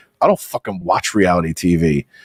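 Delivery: play-acted condescending, superior put-down tone. Imitating the other speaker's answer to a question: imitating a condescending tone. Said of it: "you will condescendingly be to me like".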